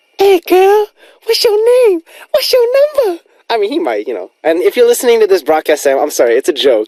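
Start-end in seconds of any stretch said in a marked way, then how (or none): 0.2-3.3 put-on very high, girly, feminine falsetto. Joking how Sam might talk to girls: Sam's feminine falsetto, put on. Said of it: "feminine, uh, falsetto voice".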